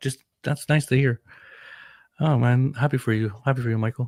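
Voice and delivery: emotional, choked-up voice, catching. Podcast host reacting to michael's story about his kid, choked up. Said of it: "I'm getting choked up".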